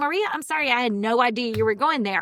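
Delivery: earnest, sincere delivery. Speaker recounts apologizing to his daughter during a game, retelling a sincere apology. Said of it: "I was like".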